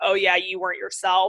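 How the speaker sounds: ordinary delivery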